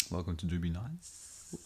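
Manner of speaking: polished professional announcer voice with tongue roll. Show creator trying out the show intro in a professional announcer voice. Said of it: "Very professional".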